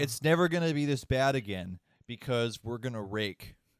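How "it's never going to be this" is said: plain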